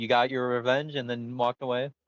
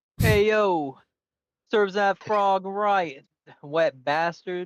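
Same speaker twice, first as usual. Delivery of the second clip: put-on Brooklyn accent, pitched up; 7 semitones higher, 3 dB louder than usual. Answering a request during a game for a Brooklyn accent: Brooklyn accent. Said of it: "you need to give me a, a Brooklyn accent".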